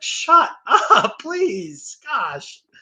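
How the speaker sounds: put-on very high, very slow, drawn-out exasperated outburst. Retelling a reaction to a bragging commentator: retelling an exasperated outburst. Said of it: "that's my emotional outburst on that".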